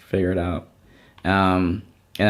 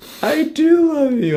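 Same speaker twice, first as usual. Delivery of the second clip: put-on childlike sobbing, pitched very high; 4 dB louder than usual. Retelling answering his mom that he loves her: imitating his childhood crying. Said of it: "I'm crying".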